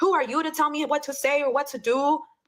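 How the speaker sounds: put-on indignant, defensive tone. Speaker retelling a fight quotes the woman who barged in, imitating someone getting defensive. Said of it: "she gets defensive".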